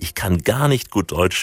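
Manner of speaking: plain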